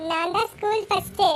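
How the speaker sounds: ordinary delivery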